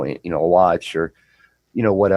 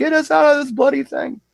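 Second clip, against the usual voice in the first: very high, panicked, freaking-out pleading. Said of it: "he's freaking out".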